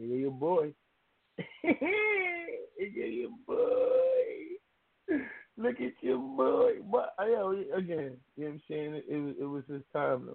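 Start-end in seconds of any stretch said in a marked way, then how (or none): 0.0-6.7 put-on, very high, drawn-out, laughing sing-song teasing. Retelling teasing his girl, a fan, when the news came up: retelling own laughing tease. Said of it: "I'm laughing like".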